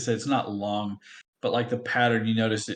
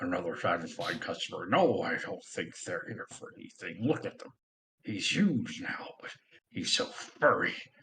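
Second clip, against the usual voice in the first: goblin voice muttering quietly to itself; 3 semitones lower, 4 dB quieter than usual. Voicing a goblin with a toffee apple head: goblin muttering to himself. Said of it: "talking to himself, muttering".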